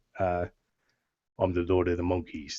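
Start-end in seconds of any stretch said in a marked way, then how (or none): 1.3-2.5 deep, low, hushed Cockney accent. Showing the voice he uses for a game character, Lord of the Monkeys Cockney voice. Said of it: "He's the Cockney kind of thing".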